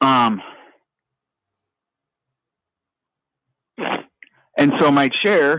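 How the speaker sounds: voice near crying, held in. Talking about what their chair costs, holding back tears. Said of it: "Sorry, I'm trying not to cry right now".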